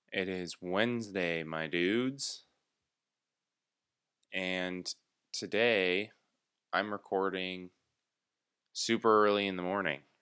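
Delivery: tired, weary, sleepy-sounding. Host opening an early-morning podcast recording, tired. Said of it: "so if I sound tired".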